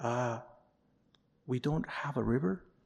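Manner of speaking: soft, hushed whisper. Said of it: "somebody whispers to his ear".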